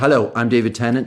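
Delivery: sincere, serious, earnest, straight announcer tone. Recording the promo line again, a more serious take: serious delivery. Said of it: "Shall we give them a more serious one as well?".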